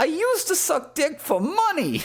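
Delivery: very high, sing-song comedian voice, swooping and drawn out. Repeating the other speaker's impression from the roast: high-pitched Chuck Fury impression. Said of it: "Chuck Fury impression".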